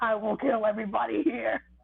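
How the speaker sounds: rough, drawn-out, vengeful screaming. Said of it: "just screaming out loud".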